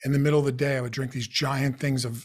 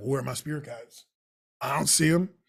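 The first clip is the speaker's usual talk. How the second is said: put-on harsh, sarcastic, cynical tone. Retelling own reaction after being told to meditate: imitating own sarcastic cynical tone. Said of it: "really sarcastic and cynic-, ... cynical in a, ... a harsh way".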